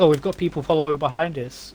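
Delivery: plain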